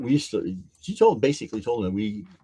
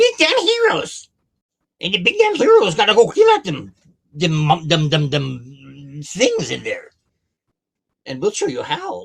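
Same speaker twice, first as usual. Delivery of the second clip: high, loud, swooping kobold voice; 8 semitones higher, 7 dB louder than usual. Asked to do the voice, the storyteller plays a kobold leader: kobold leader voice. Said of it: "Do the voice".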